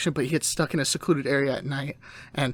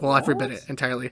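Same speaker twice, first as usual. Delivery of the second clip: plain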